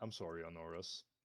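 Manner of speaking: whispering in put-on voice. Voicing a character who apologizes to honoris: whispering in character. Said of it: "I'll whisper and I'll say".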